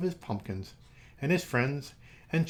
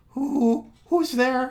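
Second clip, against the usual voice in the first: very high, very loud stuttered, stammering squeak; 10 semitones higher, 8 dB louder than usual. Narrator reads a character hiding under his armchair from a knock, squeaky voice. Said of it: "he squeaked".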